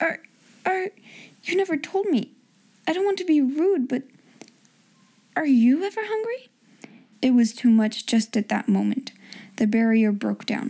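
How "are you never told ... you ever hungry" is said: timid, almost awe-struck, higher-pitched voice. Reading a story aloud, voice a woman asking Sarah in a timid, almost awe-stricken voice. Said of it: "she said in a timid, almost awe-stricken voice".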